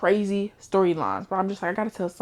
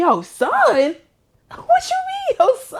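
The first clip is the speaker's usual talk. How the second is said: put-on scream, higher and louder; 7 dB louder than usual. Retelling own reaction to a book twist: imitating own scream. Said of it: "I screamed".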